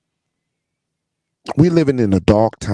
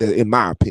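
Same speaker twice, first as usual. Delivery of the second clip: plain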